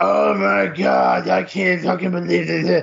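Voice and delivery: very slow, creaky, rough hag voice, drawn out. Retelling what a woman said as she came around, in a deep Dark Crystal hag voice. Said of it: "the witch hag or whatever it was, the creature in there got the deep voice".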